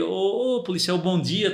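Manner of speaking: slow, put-on, overly friendly, buttering-up tone. Retelling greeting a police officer to ask a favor: put-on friendly tone. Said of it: "aquela coisa bem simpática".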